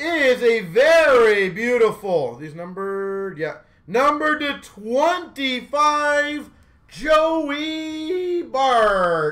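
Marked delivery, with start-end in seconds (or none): 3.9-9.3 voice cracking, higher, slower. Showing numbered card patches one by one, voice cracking. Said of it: "As my voice cracks".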